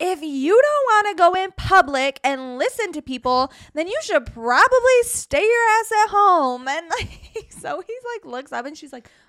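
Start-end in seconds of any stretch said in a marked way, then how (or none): 0.0-6.7 very loud, high shouting. Retelling what they shouted at someone reading a menu, reenacting shouting. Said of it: "I'm literally like shouting at Zoe like".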